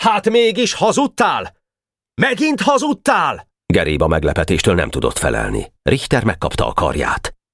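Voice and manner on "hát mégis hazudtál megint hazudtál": very high, angry shouting cry. Narrator reads Boka confronting Geréb, shouting angrily. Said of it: "Boka haragosan kiáltott rá".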